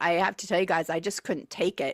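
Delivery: ordinary talk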